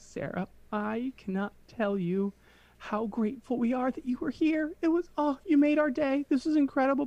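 sobbing through the words, very high, bawling. Retelling the end of a wedding night, the speaker voices the bride thanking a woman, imitating her bawling. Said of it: "crying, like, bawling".

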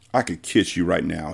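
murmuring under his breath. Following a woman down a hall, a man speaks to her, muttering. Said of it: "he muttered".

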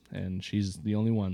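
normal talking voice

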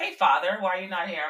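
put-on sarcastic tone. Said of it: "I call him father when I'm being sarcastic".

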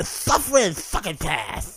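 poorly done put-on cartoon duck voice. Attempting a cartoon impression while discussing old cartoons: Daffy Duck voice. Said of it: "I was going for Daffy Duck".

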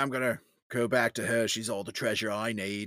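clumsy, bad, put-on Australian accent. Quoting a movie character at the end of the film: bad australian accent. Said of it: "in my bad Australian accent".

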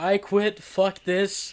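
put-on deliberate, slow, drawn-out shout, words weighted. Retelling quitting a restaurant job to the boss: imitating own yelling. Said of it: "I just yelled at my boss".

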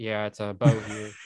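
low, flat, unvaried one-note monotone. Describing how Bo talks, doing a monotone Bo impression. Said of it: "he's so monotone".

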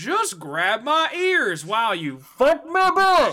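silly cartoon dog voice with swinging pitch. Speaker describes an edited video clip and quotes its line in a Goofy impression. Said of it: "someone doing a Goofy impression goes".

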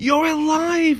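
joyful. Narrator reads the lioness recognizing her old friend, happy. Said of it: "she said happily".

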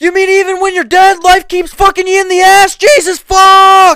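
shrieking at full volume, very high, "fuck" drawn out. Retelling a joke about being dead, acting out the man in it: imitating someone screaming. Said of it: "And he's screaming and shit".

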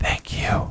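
soft, breathy, barely voiced whisper. The ghost child speaks to Catla just before disappearing, whispering. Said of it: "he whispered just before he disappeared".

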